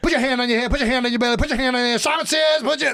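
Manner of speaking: very high, breakneck rapid-fire auctioneer call. Showing how quickly a Simon Says championship goes: very fast. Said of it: "They go quick".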